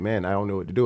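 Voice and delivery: put-on crying voice, imitated sobbing. Retelling how someone sat outside in a car: imitating someone crying.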